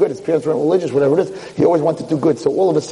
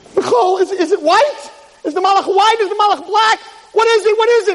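mock screaming, very high-pitched shrieking. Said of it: "And he starts screaming".

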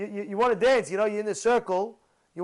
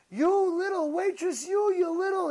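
put-on scream, higher pitch; 9 semitones higher than usual. Retelling a lady scolding a waitress over spilled water: imitating someone screaming. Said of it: "started screaming at the lady".

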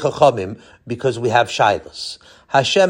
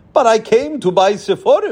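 complaining, protesting tone; 7 semitones higher than usual. Tzadok, told to put his books back on the shelves, complaining. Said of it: "complained Tzadok".

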